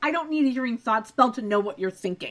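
ordinary talk

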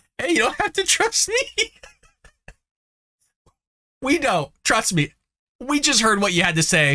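high, swooping voice on the verge of tears. Addressing the folks watching after hearing a woman's remarks, almost crying. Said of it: "I'm almost crying. I'm sorry, folks".

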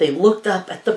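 ordinary delivery, nothing marked

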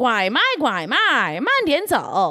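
twangy rural accent. Comparing a rural dialect to a Kentucky accent, twangy rural accent. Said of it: "it's like twangy".

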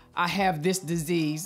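normal talking voice

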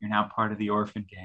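whispering. Reaching over to an orphan being hugged, the speaker says this in a whisper. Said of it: "I reach over and I whisper".

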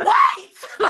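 very high, very loud, shrill scream. Retelling running to a closing gate, imitating own scream. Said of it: "I just screamed 'cause I was so tired".

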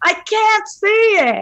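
put-on very high, screaming old-woman voice. Retelling yelling at the television during a dark battle scene, retelling screaming like an old woman. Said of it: "screaming at my television like I was an old woman".

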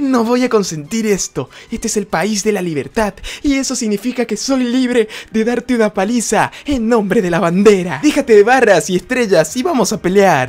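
squeaky, very high voice pushed to its highest. Performing a character's lines in a scene, very high-pitched voice. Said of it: "hacer la voz lo más aguda posible".

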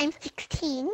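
put-on very high-pitched anime fangirl, otaku girl voice. Asked how old they are, the speaker answers in an otaku girl impression. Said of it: "That is like a really otaku girl impression".

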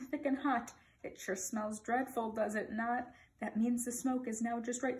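usual speaking voice

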